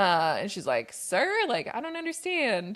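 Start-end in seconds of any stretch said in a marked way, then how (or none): 0.9-2.8 sweet put-on Southern voice, higher. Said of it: "In her cutest little [name]".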